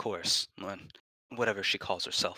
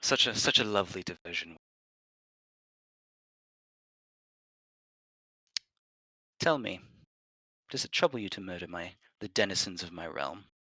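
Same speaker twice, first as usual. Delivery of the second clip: very smooth, silky, evenly measured voice. Voicing a figure addressing players after a golf clap: very smooth, even voice. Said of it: "this very smooth, uh, even, even voice".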